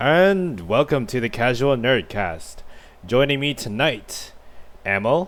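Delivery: slow, drawn-out announcer intro voice. Host opens the podcast and introduces the guests in an announcer voice. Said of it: "is that your like announcer voice?".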